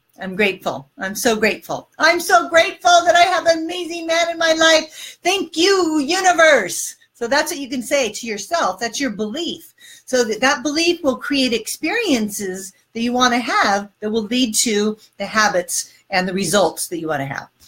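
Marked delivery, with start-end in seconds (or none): 0.2-7.0 thankful, passionate, grateful tone with rising enthusiasm. Showing how to say an affirmation to yourself: grateful and enthusiastic. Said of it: "I'm using gratitude".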